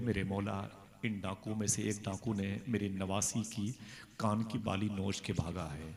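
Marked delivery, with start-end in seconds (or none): none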